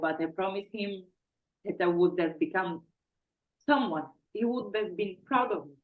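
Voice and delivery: choked-up, emotional words breaking mid-phrase, halting. Speaker recalling a promise made to him, a bit emotional. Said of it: "I'm a bit emotional".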